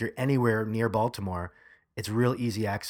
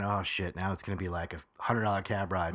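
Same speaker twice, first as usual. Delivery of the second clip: normal talking voice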